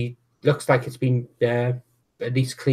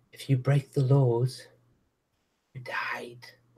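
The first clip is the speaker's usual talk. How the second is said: stage whisper, soft and hushed half-whisper; 4 dB quieter than usual. Narrating a scene where she leans in to tell you: half-whispering. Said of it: "And she whispers that to you as she leans in".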